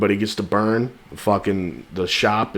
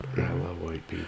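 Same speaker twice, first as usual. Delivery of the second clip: whisper, much quieter; 3 semitones lower, 10 dB quieter than usual. Joking with a co-host, whispering. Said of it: "Why are we whispering?".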